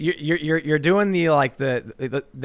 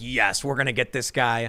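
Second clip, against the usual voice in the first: normal talking voice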